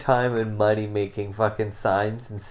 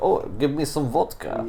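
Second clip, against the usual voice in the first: cheesy, hokey fake Russian accent, pitched up; 5 semitones higher than usual. Mocking the made-up accents of hired actors, in a hokey fake Russian accent. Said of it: "make up a fucking Russian accent".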